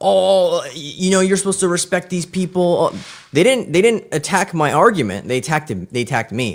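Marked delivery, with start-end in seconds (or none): 0.0-2.9 mock irritated, angry lecturing teacher voice, pitched up. Retelling how the teacher scolded in class: imitating an angry teacher. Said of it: "The teacher got pissed".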